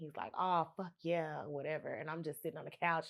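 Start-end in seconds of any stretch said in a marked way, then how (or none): 0.4-1.4 groaning, sensual male moan of pleasure. Retelling what a man said, overheard from the next room: imitating a man moaning. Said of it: "He's moaning".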